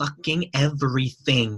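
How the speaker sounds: blunt, brash, fired-off delivery. Retelling how Gary answered a question about content marketing, Gary impression. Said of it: "that's a brilliant impression".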